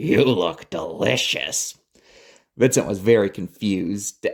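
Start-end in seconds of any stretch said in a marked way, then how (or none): 0.0-1.8 deep, gravelly, rough-voiced monster voice. Reading a story aloud, voicing a creature: deep gravelly creature voice. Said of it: "The creature spoke in a deep, gravelly voice".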